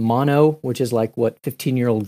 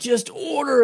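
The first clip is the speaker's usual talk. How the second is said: yelling at a much higher pitch; 13 semitones higher than usual. A father recalls losing it with his five-year-old son, retelling a yell. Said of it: "I just start yelling at him".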